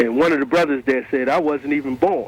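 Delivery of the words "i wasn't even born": normal talking voice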